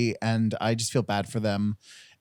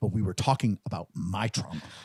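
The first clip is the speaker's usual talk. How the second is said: acting upset, much lower, quieter man's voice; 3 semitones lower, 3 dB quieter than usual. Retelling an overheard couple's fight, giving the man's reply, imitating an upset man. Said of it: "he was like really upset".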